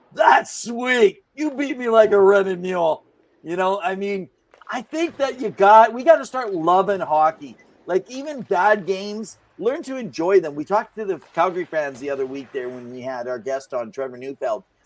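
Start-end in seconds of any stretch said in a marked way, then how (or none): 0.2-3.1 high, raised yelling. Retelling yelling at a scorer while being the goalie: imitating own yell. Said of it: "yelling at the guy".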